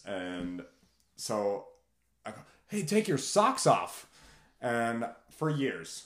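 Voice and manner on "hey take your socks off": put-on very high, loud, shouted yell. Retelling yelling at people from a chairlift: imitating a yell. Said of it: "And I yelled".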